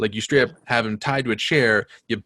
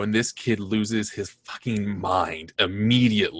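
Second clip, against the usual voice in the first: ordinary delivery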